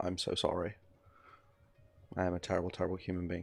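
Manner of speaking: scripted, rehearsed contrite online-creator tone. Joking that nothing said can be retracted, parodying a YouTube apology video. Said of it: "one of those YouTube apology videos where it's like".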